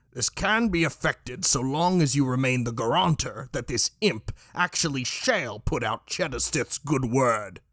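horrible, ravaged, damaged-sounding voice. Reading a story, voicing someone overheard speaking through a door: horrible, smoke-ravaged voice. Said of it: "said a horrible, smoke-ravaged voice".

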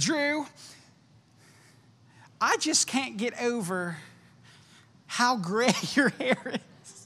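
put-on old, slow, high Kentucky southern drawl. Quoting his mother from yesterday: old Kentucky southern accent. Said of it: "in a southern, old Kentucky southern accent".

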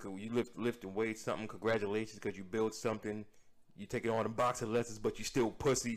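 normal talking voice

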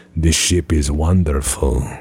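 eerie, unhinged, creepy, weird delivery. Acting out a Starfleet engineer praising the ship: creepy, weird voice. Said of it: "Just really creepy engineer".

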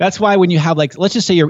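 high, laughing, pumped-up excited rush. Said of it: "My, my voice just got all pumped up here".

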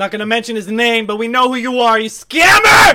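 very loud, very high, shrill, accusing yell. Speaker calls out a course seller who scammed them, yelling. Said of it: "I didn't mean to yell".

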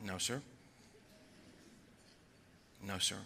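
sheepish, under the breath. Retelling a reply to God during airplane turbulence: sheepish, under the breath. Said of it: "I sheepishly said under my breath".

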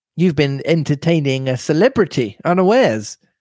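ordinary delivery

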